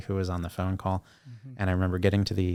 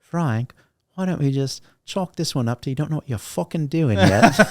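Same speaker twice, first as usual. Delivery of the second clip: put-on very loud, pitched-up London-accented bellow; 7 semitones higher, 9 dB louder than usual. Retelling what a man said to him, quoting him in a london accent. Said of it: "a London accent".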